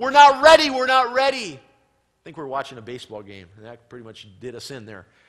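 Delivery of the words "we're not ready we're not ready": full-throated, very loud, high-pitched screaming. Retelling a nightmare where grandfather fell on the floor: imitating a scream. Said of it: "he screamed out".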